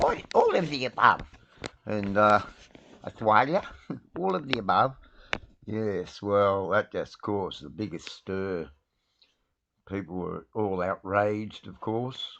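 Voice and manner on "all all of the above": tiny, small, high-pitched little voice. Retelling how a man answered a question, the speaker does his answer: imitating his little voice. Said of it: "in his little voice, and I'll do it".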